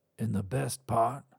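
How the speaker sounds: softly whispered. A narrator reads a character speaking to her: whispered. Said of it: "whispered Garth".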